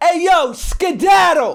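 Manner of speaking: put-on high Brooklyn kid voice. Retelling the video, another kid speaking: imitating a Brooklyn kid. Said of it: "you hear another kid go".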